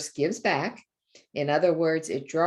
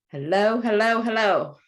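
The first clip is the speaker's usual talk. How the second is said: loud shouting, yelling; 5 semitones higher, 4 dB louder than usual. Telling someone to say hello ever louder, now shouting it. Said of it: "Now shout it".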